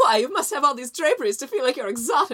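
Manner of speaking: high, a little manic woman's voice. Among friends talking about the home, you slip into a manic mad-woman-about-town voice. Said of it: "I just love doing that voice so much".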